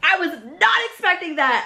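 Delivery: cheerful, delighted tone, high and swooping. Reacting to surprising news, catching own tone: sounding happy. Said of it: "why that sounds so happy?".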